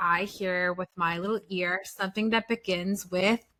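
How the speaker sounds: ordinary talk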